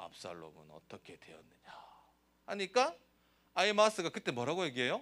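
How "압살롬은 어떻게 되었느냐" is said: very low, very soft, deep, grave, hushed heavy voice. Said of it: "갑자기 풀이 팍 죽으면서 중후한 목소리로".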